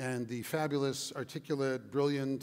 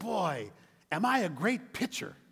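proud, slow, high-pitched voice; 6 semitones higher than usual. A little boy, after strike three, answers his father; proudly declaring. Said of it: "proudly declared".

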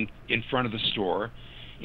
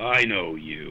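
really low, dropped voice, sunk way down; 6 semitones lower than usual. Retelling a man who recognized him, in a really low voice. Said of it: "just really low voice".

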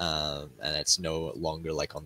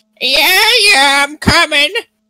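put-on old, elderly man's voice calling out; 21 dB louder than usual. The storyteller voices a man answering a knock at the door, old, elderly man voice. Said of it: "this kind of, like, old, elderly man kind of call out".

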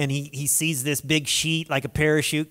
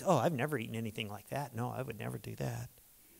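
low, hushed, very soft self-righteous tone; 4 semitones lower, 11 dB quieter than usual. Retelling Peter's reply to God in this chapter, mock self-righteous Peter. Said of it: "can't you hear the self-righteous pride in his voice".

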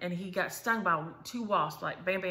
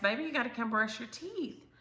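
high-pitched, calling holler; 5 semitones higher than usual. Retelling calling out to Ari, who didn't answer: retelling a holler. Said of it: "I hollered at Ari".

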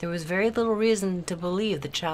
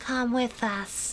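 gently spoken, soft, pitched-up voice; 6 semitones higher than usual. A girl resting her head on another's shoulder speaks in a soft voice. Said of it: "her voice soft".

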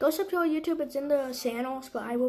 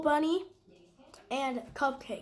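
normal talking voice

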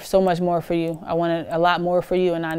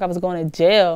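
plain

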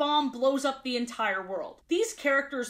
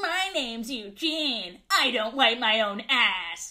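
put-on mocking voice, slower; 2 semitones lower than usual. Recounting how Plankton voiced the Mr. Krabs puppet, retelling a mocking Mr. Krabs puppet voice. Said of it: "in a very mocking tone".

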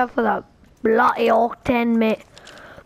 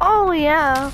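plain

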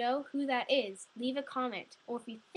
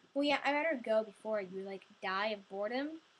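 plain

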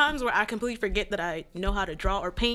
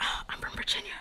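soft, hushed, confiding whisper. Person introducing herself says where she is from, whispered. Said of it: "I'm about to whisper this part".

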